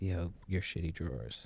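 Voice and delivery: soft, hushed half-whisper under the breath. Retelling quietly warning someone at the mess hall: retelling a half-whisper. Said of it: "whispered to him".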